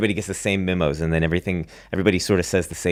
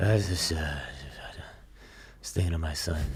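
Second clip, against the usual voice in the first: put-on very soft, hushed, elderly murmur; 2 semitones lower, 10 dB quieter than usual. Acting out Joe Biden like an old man at a nursing home. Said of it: "looking out a window at an old folks' home".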